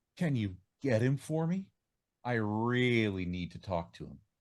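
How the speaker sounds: put-on, sultry, sexy, seductive voice. Retelling how a woman asked a man for the manager, imitating a sexy voice. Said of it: "asked in a real sexy voice".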